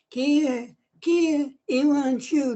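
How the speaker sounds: scary, high-pitched, very slow, drawn-out voice. Recounting what a cute little creature said: high-pitched scary voice. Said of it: "It was that high pitched".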